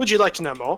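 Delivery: put-on British accent, southern English style. Told to order tea and scones, improvising in a british accent. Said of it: "I'm told I do a very good British accent".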